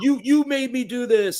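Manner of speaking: very high, shrill, high-pitched, accusatory screaming. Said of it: "just screaming at each other".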